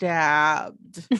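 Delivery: eerie, slow, stretched-out, spooky single word. Imitating how a woman says stabbed: drawn-out eerie stabbed. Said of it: "it's like drawn out and it's spooky as fucking hell".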